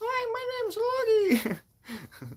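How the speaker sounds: very high, very slow, swooping made-up character voice. Retelling a brother's made-up voice: imitating brother's Loogie voice. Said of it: "a voice called L-, Loogie, and Loogie was like".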